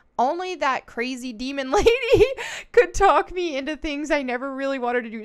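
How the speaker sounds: words broken up by laughter. The speaker tells a personal story, laughing while talking. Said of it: "Sorry, I'm laughing".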